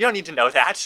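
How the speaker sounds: mock affronted, defensive, dismissive tone. Quoting a character answering his mom's questions: imitating someone offended. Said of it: "he's kind of offended".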